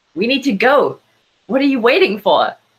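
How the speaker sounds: frustrated, angry, urgent shouting. Ash yells at the powered-down Jay, who refuses to go out and fight: yelling. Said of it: "clenched fists and just yelling like".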